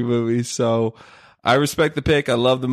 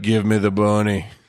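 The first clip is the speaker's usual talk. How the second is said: put-on very slow, drawn-out drawling Southern accent; 2 semitones lower than usual. Repeating an impression when asked again: Nicolas Cage Southern accent impression. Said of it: "real slow like that".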